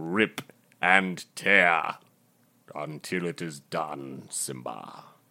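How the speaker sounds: put-on deep actor voice. Showing the others a James Earl Jones voice. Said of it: "I'm James Earl Jones, you guys".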